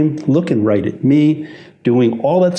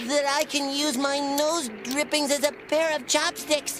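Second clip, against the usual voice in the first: teeth-chattering shiver, very high, very soft; 13 semitones higher, 11 dB quieter than usual. Host in a chilly studio opening a training video, teeth chattering from cold. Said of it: "(teeth chattering)".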